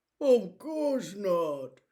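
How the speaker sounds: deeply scandalised, very shocked. Narrator reading a story, the bear answering Peter's warning, very shocked voice. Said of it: "said the bear in a very shocked voice".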